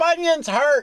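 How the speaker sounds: put-on very high-pitched, cranky, crotchety old-man voice. Cutting into the co-host's podcast sign-off, playing a mock crotchety old man. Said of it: "save you all listeners from the crotchety old man".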